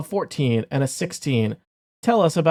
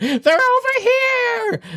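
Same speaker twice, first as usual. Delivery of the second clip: goblin voice pitched way up, drawn out; 4 dB louder than usual. Narrator voices a kobold that spots the players, in a goblin-y kobold voice. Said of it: "in a goblin-y".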